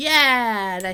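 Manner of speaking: loud, high shout with drawn-out "yeah". Spotting the Seraph while playing, shouting into the microphone. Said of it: "I'm shouting into the microphone".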